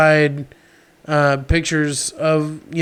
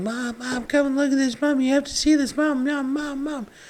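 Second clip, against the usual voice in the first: panicked, frantic pleading, much higher pitch; 10 semitones higher, 6 dB quieter than usual. Recalling calling their mom out of the garage; retelling own freaking out. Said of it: "I was freaking out".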